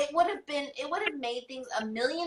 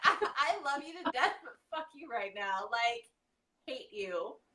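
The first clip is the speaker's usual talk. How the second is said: mock tearful angry laughter, much quieter; 5 dB quieter than usual. Retelling words she said to someone through tears, crying, laughing and angry at once. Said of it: "crying and laughing and angry all at the same time".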